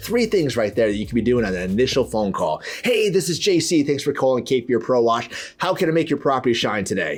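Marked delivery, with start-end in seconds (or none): 2.8-7.2 upbeat, excited voice with a smile in it. Demonstrating how to answer an initial phone call, excited and smiling. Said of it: "I'm excited. They can feel it in my tone. I'm smiling".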